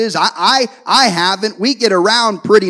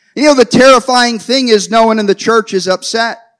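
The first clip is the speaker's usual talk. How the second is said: normal talking voice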